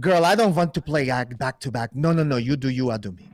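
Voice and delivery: strong put-on Austrian accent. Retelling what a man who shared the decks said, in a strong austrian accent. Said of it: "In his strong Austrian accent".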